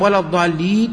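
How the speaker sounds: ordinary talk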